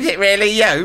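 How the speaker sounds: giggly, laughing voice, very high. Retelling night calls to famous people, imitating a laughing prank caller. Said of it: "people laughing and going".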